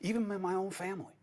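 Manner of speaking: hushed voice. Confiding about the speaker's own family, whispering. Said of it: "Why am I whispering".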